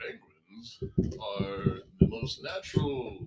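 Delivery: very slow, breathy, breathed-out delivery. Performing the requested impression again: Morgan Freeman impression. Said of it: "let's hear [name]'s, uh, Morgan Freeman".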